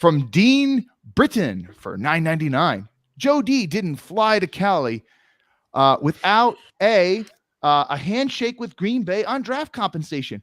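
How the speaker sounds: animated, lively, swooping, rising non-monotone delivery. Reading an item aloud, deliberately in a lively non-monotone voice. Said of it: "let me do this in a non-monotone voice".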